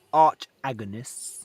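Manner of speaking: slow, drawn-out delivery.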